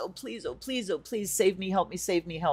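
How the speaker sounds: desperate begging, pleading repeated over and over. Speaker retells begging the Goddess for help, imitating desperate begging. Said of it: "just like begging Goddess".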